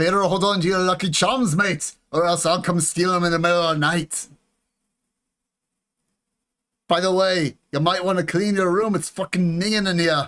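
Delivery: bad, scuffed fake Scottish accent. Speaker showing off an impression of a Scotsman, in a bad Scottish accent. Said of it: "How's my impression?".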